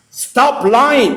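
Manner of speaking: heated, sharp tone. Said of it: "Stop yelling and say what she lied about".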